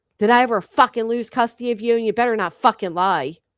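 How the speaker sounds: hard, harsh, accusing tone with threat underneath. Retelling a late-night call to a girl: imitating an accusatory tone. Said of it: "with that tone".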